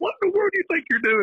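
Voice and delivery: furious, mad rant, leaping up an octave. Retelling how the coach yelled at a player: imitating Coach Peak's mad high-pitched voice. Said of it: "if Peak's voice goes to another octave, he's mad".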